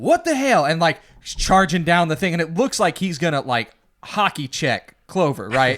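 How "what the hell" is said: mock very high-pitched screamed outburst. Retelling how Greymane stopped the feast: imitating someone screaming. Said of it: "He's screaming".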